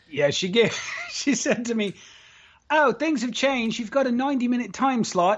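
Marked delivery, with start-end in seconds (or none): 2.7-5.4 terrible put-on Australian accent, pitched high. Quoting what she said to him, terrible australian accent. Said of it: "that's a terrible Australian accent".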